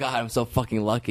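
plain

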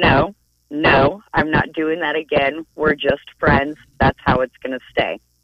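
plain

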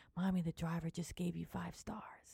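put-on hushed, secretive, soft little child's half-whisper. Retelling what the child half-whispered when getting out of the car: imitating a half-whisper. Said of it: "Jillian whispered to me".

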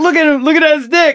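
put-on, very high-pitched, loud shouted yell. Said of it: "And I yell out loud".

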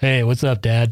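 play-acted deep, groggy, sleepy just-woke-up voice. Retelling answering an early phone call thought to be from dad, imitating deep groggy morning voice. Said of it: "in my deep, groggy morning voice".

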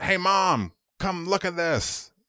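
acted, shrill, very high needling holler. Retelling how a friend called his mom to the table: imitating a friend yelling. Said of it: "and he yells".

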